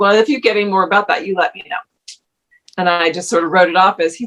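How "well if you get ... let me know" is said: mocking, dry, sarcastic tone. Retelling her reply to a facilitator at a gathering: imitating her own sarcastic reply. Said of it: "So I sarcastically said".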